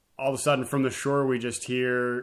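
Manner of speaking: usual speaking voice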